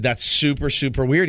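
plain

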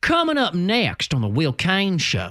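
put-on sing-song Southern accent, promo-style teasing. Reading a show's coming-up-next tease in a put-on southern accent. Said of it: "I'm just giving him a southern accent".

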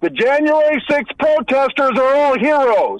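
loud, slow, public-proclamation style, top of lungs. Retelling own announcement near a store checkout, loud public declaration. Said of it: "at the top of my lungs, not quite yelling".

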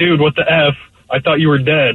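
normal talking voice

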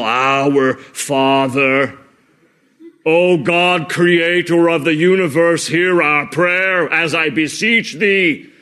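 very slow, flat, single-pitch monotone intoning. Showing how grandiose prayer words must sound to be powerful: monotone voice. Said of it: "It almost has to be like this, you know, monotone voice".

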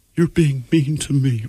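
put-on soft, slow, weepy, drunk whimper.

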